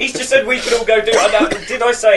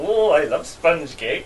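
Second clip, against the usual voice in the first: put-on low, soft, lusty voice with Swedish accent; 5 semitones lower, 5 dB quieter than usual. Asked for it in that Swedish accent, speaker answers: mock-horny Sven-Göran Eriksson voice. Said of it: "That was Sven Goran Eriksson getting a bit horny".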